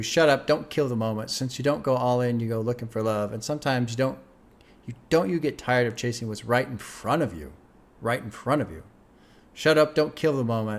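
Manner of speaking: ordinary talk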